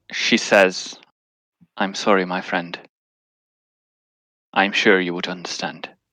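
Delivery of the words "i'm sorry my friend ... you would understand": hushed, very soft, barely audible. A character speaks to the medallion, very soft, barely audible. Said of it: "she very softly says in that you can just hear it".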